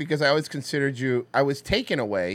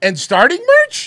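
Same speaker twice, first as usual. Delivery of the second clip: pitch climbing upward on merch; 11 dB louder than usual. Showing how to read a line from a post: reading as a question. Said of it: "You have to read like it's a question mark".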